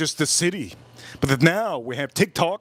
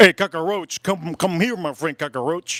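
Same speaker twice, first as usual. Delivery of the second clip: put-on Cuban gangster accent. Retelling the man at Target calling you over, Tony Montana impression. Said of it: "It was like Tony Montana".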